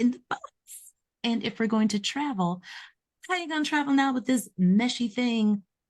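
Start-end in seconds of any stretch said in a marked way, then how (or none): none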